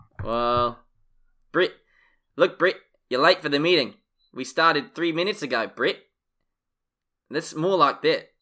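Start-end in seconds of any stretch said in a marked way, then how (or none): 0.3-6.0 New Zealand accent with short, flat vowels. Explaining accent differences, demonstrating a New Zealand accent. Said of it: "you've got to kind of flitten the vowels".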